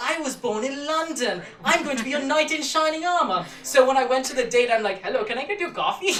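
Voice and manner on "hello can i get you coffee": put-on Indian English accent, put on. Greeting a date and offering to get coffee in an Indian accent. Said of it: "that trick is an Indian accent".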